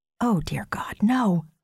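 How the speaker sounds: audible stage-whispered exclamation. The narrator reacts to news about a man, whispered. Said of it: "I whisper".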